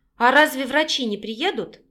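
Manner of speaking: ordinary delivery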